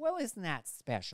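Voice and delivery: utterly dismissive, condescending tone. Quoting a catchphrase as the church lady: imitating the Church Lady's dismissive tone. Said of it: "the ultimate dismissal of a human being".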